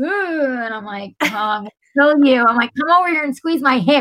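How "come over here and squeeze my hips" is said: high, rushed, frantic, panicked, losing-it voice. Retelling hearing a noise and calling him over, retelling a frantic plea. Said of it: "I'm losing my shit".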